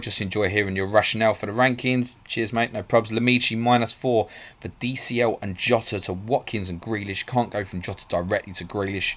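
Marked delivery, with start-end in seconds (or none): none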